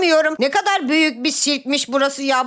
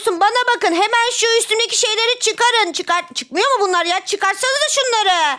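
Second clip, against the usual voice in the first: words pushed out, pitched up; 5 semitones higher than usual. A character addresses the group, who then ask why they're yelling: yelling. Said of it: "Ya niye bağırıyorsun ya?".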